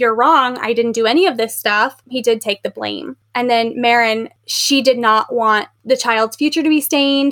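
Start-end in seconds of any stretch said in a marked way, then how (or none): none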